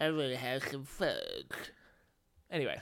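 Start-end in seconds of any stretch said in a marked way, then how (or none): 0.0-1.5 mopey, swooping cartoon dog voice. After a friend says fudge must be said this way, doing a Droopy Dog voice. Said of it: "you got to say it in Droopy Dog voice".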